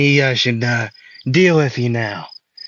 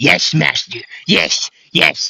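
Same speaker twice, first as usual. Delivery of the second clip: put-on servile goblin minion voice, pitched higher; 3 semitones higher than usual. Retelling a scene where a goblin answers its master: acting as a servile goblin. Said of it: "And then the goblin would say".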